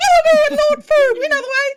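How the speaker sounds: very high-pitched, urgent called-out voice. Voicing Penelope leading the group through the streets: Penelope character voice. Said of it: "She's like".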